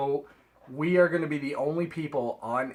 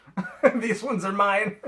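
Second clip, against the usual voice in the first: high, laughing, teasing dismissive tone. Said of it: "And I was like".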